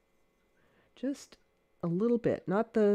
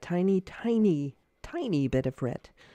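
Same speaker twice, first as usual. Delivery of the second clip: emphatic, hard stress on each tiny. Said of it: "I'm emphasizing that".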